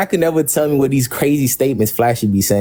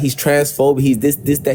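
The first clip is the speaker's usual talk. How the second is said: normal talking voice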